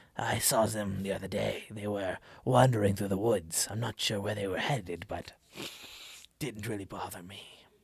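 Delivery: catlike put-on character voice. Showing how to sell that the NPC is a cat: catlike voice. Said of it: "I might do this if I wanna sell that he's a cat".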